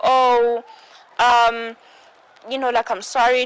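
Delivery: mock sudden apologetic tone. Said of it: "he will change his tone so fast".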